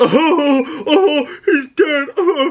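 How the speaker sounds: drawn-out, very high, slow mocking, jeering laughter. Retelling teens in the theater row behind: imitating boys laughing mockingly. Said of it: "they all start laughing like fucking assholes".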